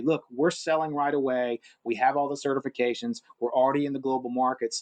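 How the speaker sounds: usual speaking voice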